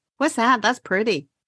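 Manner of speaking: ordinary delivery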